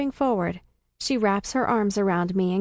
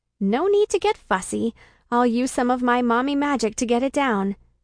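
ordinary delivery

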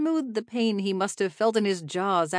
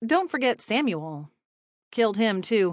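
ordinary delivery

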